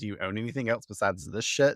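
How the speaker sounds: ordinary delivery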